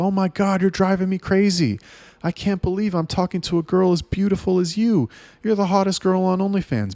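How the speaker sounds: thrilled, gushing tone. Acting out a buyer who loves what was sold: imitating an excited customer. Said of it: "He's like".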